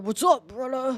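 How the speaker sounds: put-on man voice. Trying out a voice for the chat, like Hulk Hogan: Hulk Hogan voice. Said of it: "have that man voice".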